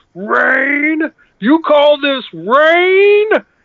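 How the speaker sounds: very high shout with "rain" stretched long. Retelling how a friend shouted up at the heavens, retelling a shout. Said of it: "he just looked to the heavens and he shouted".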